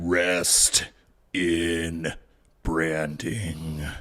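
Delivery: low voice with the word in drawn out. Asked for a wrestler impression: Undertaker impression. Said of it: "Give me the Undertaker".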